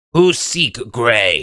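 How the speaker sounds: resounding booming loud voice, broken speech. Game narrator voices something inside the tower answering the players: booming voice. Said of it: "You hear in a booming voice from inside the tower".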